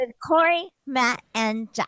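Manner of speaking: put-on creepy, eerie little-girl character voice. Introducing the podcast on request: creepy little girl voice. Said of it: "as your little girl character".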